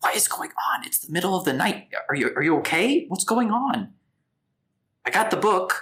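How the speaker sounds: loud, high, urgent whisper-shouting. A game narrator voices a man running in at night to find everyone there, whisper-shouting. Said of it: "he's kind of like whisper shouting".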